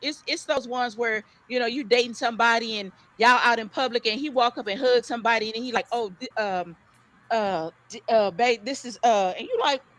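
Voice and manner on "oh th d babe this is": mock stammering, quieter. Acting out a partner caught hugging somebody in public: imitating someone stuttering. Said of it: ""Why you stuttering?"".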